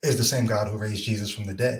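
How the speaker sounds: normal talking voice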